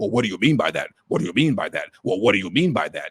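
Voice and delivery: low, extremely condescending, dismissive tone. Imitating a politician asked about reparations: imitating Bernie Sanders' condescending tone. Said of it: "in an extremely condescending tone".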